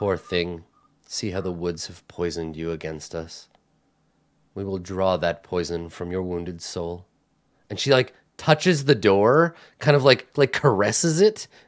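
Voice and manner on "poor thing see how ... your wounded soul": very quiet, hushed, soft-spoken voice. Voicing a nun who speaks to a player: quiet voice of a nun. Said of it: "she says quietly to you".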